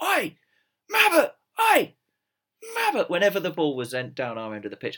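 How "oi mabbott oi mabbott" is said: mock, very high, shrill, drawn-out heckling shout. Recalling a bloke behind the goal at a match: retelling a fan's shout. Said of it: "he was shouting out".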